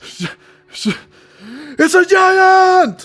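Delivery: very loud, very high, very slow, panicked terrified scream. Voicing a soldier spotting a giant creature: terrified yell at top of lungs. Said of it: "he yells at the top of his lungs".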